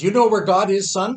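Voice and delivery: stern, commanding, loud preacher-style boom. Retelling how a preacher questioned a young boy, imitating a stern booming preacher. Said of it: "a deep, booming voice, he sat the young boy down, and he asked him sternly".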